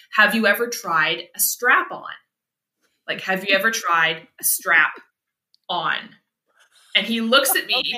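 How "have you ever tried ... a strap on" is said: ordinary delivery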